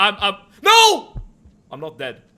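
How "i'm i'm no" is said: very loud, high-pitched, swooping yell. Speaking up in a conversation, then apologizing for it: yelling. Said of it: "Sorry for yelling".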